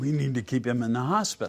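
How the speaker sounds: normal talking voice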